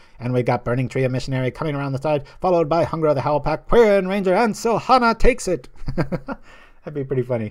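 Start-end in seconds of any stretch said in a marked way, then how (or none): 0.2-5.7 put-on booming, loud, high, old-fashioned horse-race announcer voice. Imagining calling a Kentucky Derby of named horses, old-timey race-call voice. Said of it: "Get that old-timey voice in there".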